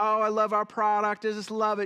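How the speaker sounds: put-on American Southern accent. Retelling a phone call from the designer helping him: Southern accent. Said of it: "Southern accent".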